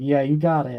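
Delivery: smug, satisfied tone. Voicing a watching character's silent reaction: satisfied smirking tone. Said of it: "sort of satisfied smirk on her face".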